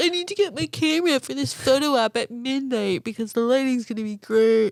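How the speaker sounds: acted-out laughing while talking. Recounting a midnight moment on narrow Airbnb stairs, retelling laughing at oneself. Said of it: "laughing at myself".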